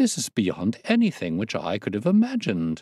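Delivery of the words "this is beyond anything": plain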